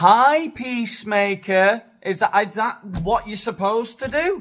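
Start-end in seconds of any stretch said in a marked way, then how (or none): 0.0-1.8 very loud, high, condescending and patronizing voice. Mocking someone kneeling to greet a competitor: imitating a patronizing greeting. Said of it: "humiliating them by kneeling on the floor and going".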